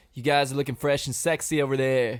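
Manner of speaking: goofy, weird California beach-dude voice. Retelling what T J said to the vets: T J's weird California beach voice. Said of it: "In his weird California Beach voice".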